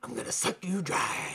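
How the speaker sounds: soft, hushed, menacing villain whisper.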